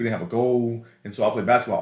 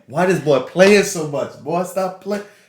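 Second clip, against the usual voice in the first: loud, high, mock chiding call-out; 7 semitones higher, 5 dB louder than usual. Retelling a classmate's remark in the school cafeteria: imitating someone talking very loud. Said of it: "very loud in the middle of the cafeteria".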